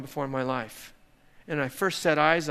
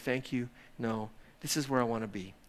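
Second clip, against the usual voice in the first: gentle, soft, quieter voice; 4 semitones lower, 7 dB quieter than usual. Offered a break from sitting with his father, the man answers softly. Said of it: "he said softly".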